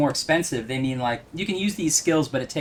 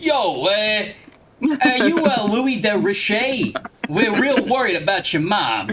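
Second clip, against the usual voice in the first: loud, high-pitched, laid-on fake New Jersey accent; 6 semitones higher, 5 dB louder than usual. Joking that the makers gave all the characters New Jersey accents; put-on New Jersey accent. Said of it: "just give them all New Jersey accents".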